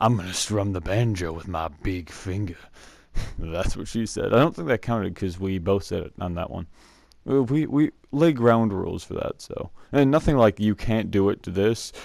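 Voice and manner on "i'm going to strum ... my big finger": creepy, low-pitched voice. Recounting a merit badge day, the speaker quotes a counselor: imitating a creepy voice. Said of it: "some guy in this creepy voice".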